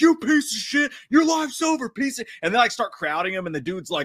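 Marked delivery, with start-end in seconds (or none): 0.0-2.3 play-acted very high, shrill, furious screaming. Retelling how fishermen reacted to the cheating: imitating fishermen screaming. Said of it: "all these fishermen start screaming".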